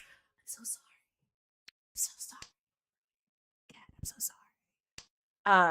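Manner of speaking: very slow, drawn-out, breathy whisper, sounding very sorry. Retelling what the band's drummer always says: imitating an apologetic drummer. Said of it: "the drummer is always so apologetic".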